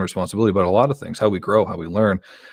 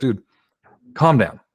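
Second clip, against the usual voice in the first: put-on firm, serious, stern talking-down; 4 semitones higher than usual. Recounting a man who kicked them and then told them off: retelling a stern rebuke. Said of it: "he gave me such a stern".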